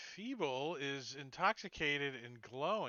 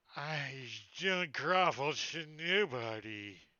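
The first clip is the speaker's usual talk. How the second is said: put-on loud, slow, very drawn-out drunken slur; 5 dB louder than usual. Voicing a staggering enemy who refuses to grovel: slurred drunken speech. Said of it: "slurring his speech".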